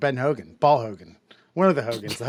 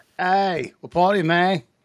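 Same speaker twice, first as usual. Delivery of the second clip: high, put-on New Zealand accent; 5 semitones higher, 4 dB louder than usual. Joking about a cover story, trying it out: attempted new zealand accent. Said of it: "Maybe just got to do a good New Zealand accent".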